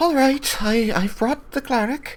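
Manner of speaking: lilting motherly voice. A storyteller voices your character's mother calling out at the door, lilting motherly voice. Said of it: "your mother's voice, kind of lilting out".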